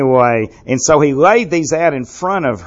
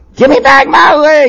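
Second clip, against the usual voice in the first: piercing, shrill screech, very high and loud; 13 semitones higher, 7 dB louder than usual. A narrator voices a woman's cry in a story, screeching. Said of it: "she screeched".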